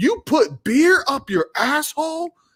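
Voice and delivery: very high, shrill, loud blurted outburst. Retelling their reaction at breakfast to a frat boy's story: retelling a loud outburst. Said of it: "I said it really loud".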